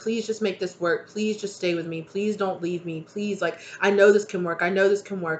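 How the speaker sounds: acted pleading, begging tone. Voicing a person's plea to a partner not to leave: imitating a begging plea. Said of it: "it's like a begging".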